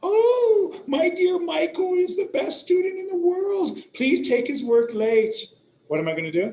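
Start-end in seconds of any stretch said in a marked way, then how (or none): 0.0-5.4 very high, loud fake sobbing. Imitating a student's mother who comes in crying to beg for late work: mock crying mother. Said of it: "she's crying and she says".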